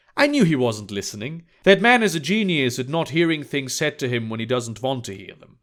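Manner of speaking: ordinary talk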